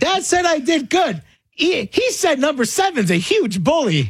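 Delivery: put-on very loud, very high-pitched, carrying kid announcing voice. Retelling what he said at the sideline near other parents: retelling a very loud voice. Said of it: "in a very loud voice".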